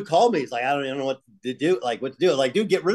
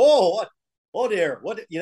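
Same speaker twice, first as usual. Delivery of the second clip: failed put-on Hawaiian accent, drifting toward Minnesota; 4 semitones higher than usual. Retelling a big Hawaiian guy behind him at a fight in the stands, bad Hawaiian accent. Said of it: "I can't even do the Hawaiian accent".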